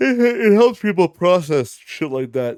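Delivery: high, very loud, yawn-stretched words. Speaker, after a long day, talks to listeners yawning while talking. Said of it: "Sorry, I'm yawning".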